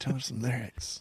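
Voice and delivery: very soft, quiet voice. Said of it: "Why get so quiet?".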